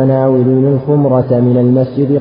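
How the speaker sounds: plain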